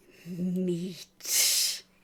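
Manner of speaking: hungry saber-toothed cat creature voice, growling. Voicing a hungry saber-toothed cat stalking the group: voicing a hungry saber-toothed cat. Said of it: "As it says that".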